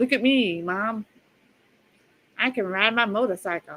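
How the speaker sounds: slow, mocking put-on tough badass-cop voice. Mocking Barry in a video as he tries being a badass cop: mocking imitation of Barry. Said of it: "He's like".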